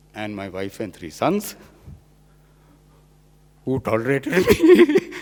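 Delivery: very high, words bubbling with laughter. Speaker thanks wife and three sons in his acknowledgements, laughing while speaking. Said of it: "I'm not crying, I'm laughing".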